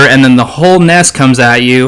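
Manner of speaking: usual speaking voice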